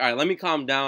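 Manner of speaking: normal talking voice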